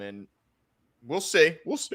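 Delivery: speech broken by hiccups. Talking over a team's new cornerbacks, hiccuping while talking. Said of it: "I got the hiccups here".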